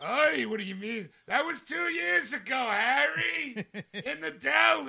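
loud, slow arguing tone, "deli" stretched out. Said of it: "with that accent and that arguing".

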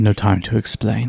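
secretive, confiding stage whisper. A woman leans in close to the listener's ear and speaks very quietly. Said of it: "she says very, very quietly into your ear".

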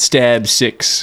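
ordinary talk, nothing marked

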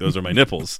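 ordinary delivery

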